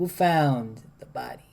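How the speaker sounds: slow, soft, hushed, every word emphasized. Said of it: "Like he would say something like".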